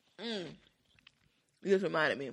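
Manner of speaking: speaking while chewing ice. Chatting with others mid-conversation, talking while eating ice. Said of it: "I'm eating ice".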